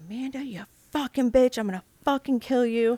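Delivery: put-on all-out, high-pitched screaming. Retelling an attacker breaking in through the front door: imitating someone screaming. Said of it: "he's screaming".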